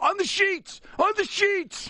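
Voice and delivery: very high-pitched, shrill put-on yell. Recalling what she would yell when a kid was about to throw up: retelling her yell. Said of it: "She'd yell".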